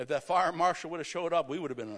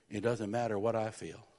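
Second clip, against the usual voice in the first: put-on whisper, lower; 5 semitones lower than usual. Retelling what an older minister said into their ear: imitating a whisper. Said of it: "he leans over and whispers in my ear".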